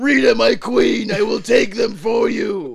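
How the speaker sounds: booming monster-villain voice. Speak to Rita, your queen, in a Goldar impression. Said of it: "I think I have a pretty good Goldar impression".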